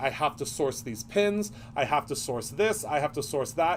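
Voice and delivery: normal talking voice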